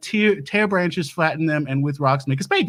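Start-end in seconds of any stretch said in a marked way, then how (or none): none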